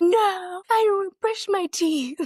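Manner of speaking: mock toddler's screaming voice, pitched way up. Retelling his answer while he lay on the floor, imitating a child screaming. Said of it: "he's screaming on the floor".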